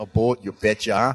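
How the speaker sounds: put-on Minnesota accent on "you betcha". Repeating the boat joke: Minnesota accent. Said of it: "I'm trying to sound like I'm from Minnesota".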